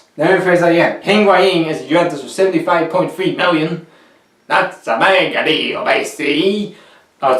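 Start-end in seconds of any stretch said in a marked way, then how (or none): 4.5-6.8 slow, bad fake Italian accent. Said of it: "the worst Italian accent you ever seen".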